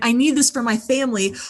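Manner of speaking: put-on tearful, crying, pleading voice. Retelling how he sat staring at the phone in fear: imitating someone crying. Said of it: "he'd be sitting there crying".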